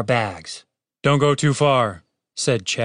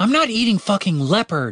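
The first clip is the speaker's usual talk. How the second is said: furious, outraged, high angry shouting; 7 semitones higher than usual. Narrator reading a character's line in a story, shouting. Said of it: "shouted Catherine".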